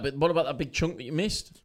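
ordinary delivery

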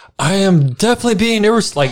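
very high-pitched, shrill yell. Retelling what a snowboarder yelled while grabbing his board, retelling a yell.

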